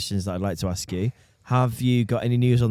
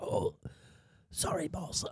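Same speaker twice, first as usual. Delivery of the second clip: weak, hushed, faint, breathy put-on sick voice; 7 semitones higher, 15 dB quieter than usual. Ringing up the boss after missing work, in a put-on sick voice. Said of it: "do your sick voice".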